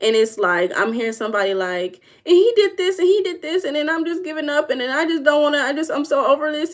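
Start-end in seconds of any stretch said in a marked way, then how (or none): 2.3-6.7 teary, pitched-up voice on the verge of sobbing. Acting out what the speaker hears from somebody; imitating someone crying. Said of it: "in a crying tone".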